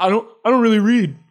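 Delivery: put-on smug voice.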